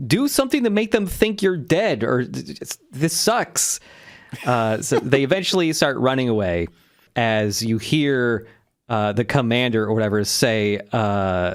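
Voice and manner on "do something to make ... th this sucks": mock high, stammering, begging plea. Retelling a character's plea while running from gunfire: imitating Sikozu pleading. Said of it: "begging, like, pleading".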